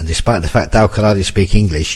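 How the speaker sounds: ordinary delivery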